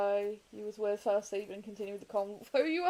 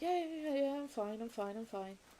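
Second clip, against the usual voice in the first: spoken really quietly, hushed, barely there; 4 semitones higher, 6 dB quieter than usual. Retelling a friend's reply after being asked why he's quiet: imitating Bandy saying it really quietly. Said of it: "like, really quietly".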